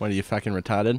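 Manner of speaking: put-on New England Boston accent. Demonstrating a favorite phrase to say, in a Boston accent. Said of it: "That's my favorite thing to say in a Boston accent".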